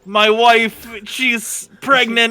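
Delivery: put-on light, vague hint of a French accent. Asked to do an Alex impression as Ivellios, a player speaks, Alex impression, vaguely French. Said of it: "Why do you sound vaguely French?".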